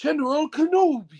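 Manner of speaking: high character voice with swooping, swinging pitch. Taking his turn, saying a line as his rival, General Grievous voice. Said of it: "I'm gonna say it in the voice of my number one's number one rival".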